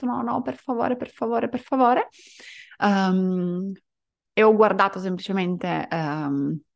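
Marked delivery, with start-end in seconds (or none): 0.1-2.1 mock, high-pitched, desperate, despairing sobbing. Retelling a dream where the speaker begged and pleaded: imitating desperate crying. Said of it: "ho iniziato a piangere nel sogno disperata".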